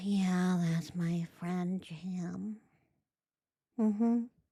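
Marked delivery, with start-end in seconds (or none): 0.0-2.6 very slow, resigned, defeated drawl, words stretched out. Pointing out how the other person answered: imitating a defeated tone. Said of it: "She sounds so defeated".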